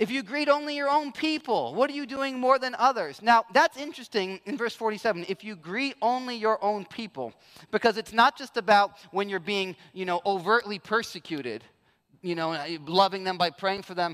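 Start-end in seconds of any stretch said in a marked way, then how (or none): 0.0-3.2 dry, mocking sarcasm, pitched up. Explaining verse 47 by voicing what he is saying, retelling a sarcastic remark.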